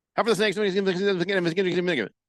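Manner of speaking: reading very fast. Reading aloud the fifth letter's quick question; reading very fast. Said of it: "so I read it very fast".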